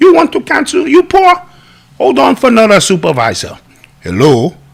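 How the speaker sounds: put-on Indian accent with sing-song tune. Acting out a call to a hired third-party customer service company from India: imitating an Indian accent. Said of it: "I started Indian and then it's the whole Middle Eastern".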